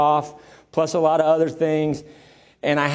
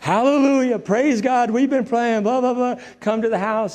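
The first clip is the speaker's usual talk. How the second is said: put-on high, tearful, weeping, overjoyed cry; 7 semitones higher than usual. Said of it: "now she really starts to cry".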